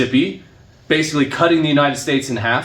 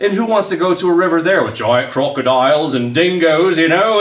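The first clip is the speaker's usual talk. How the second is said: terrible, bad fake Australian accent; 2 semitones higher, 3 dB louder than usual. An American speaker making a joking aside, in a terrible Australian accent. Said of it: "that was a terrible accent".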